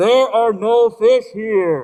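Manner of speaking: very loud, thundering, booming angry voice. Telling a joke, voicing the voice the fishermen hear, mock-angry big booming voice. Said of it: "the big booming voice comes in with some anger behind it".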